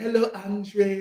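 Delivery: high, put-on French Haitian accent. Retelling how a girl on campus greeted him: imitating a French Haitian accent. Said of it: "she had the French Haitian accent too".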